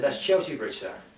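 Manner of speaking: normal talking voice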